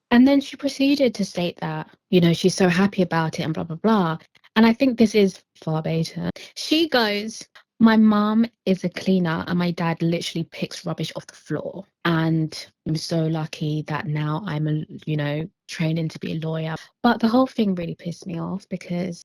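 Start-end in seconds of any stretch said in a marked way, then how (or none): none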